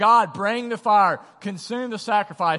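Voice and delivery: loud yell, calling out, crying out. Retelling a story of people who yell more when nothing happens: imitating yelling louder. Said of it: "they begin to yell more".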